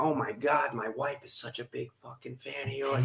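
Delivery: put-on broad, thick Boston accent, soft and hushed. Retelling a man at a marathon start line whose wife is a fan: thick Boston accent. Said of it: "He has a thick Boston accent".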